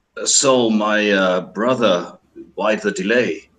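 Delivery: discreet, private, confiding aside tone. Voicing a character who brings wine and asks quietly: under his breath. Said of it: "says a little bit under his breath".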